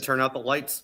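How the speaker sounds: ordinary talk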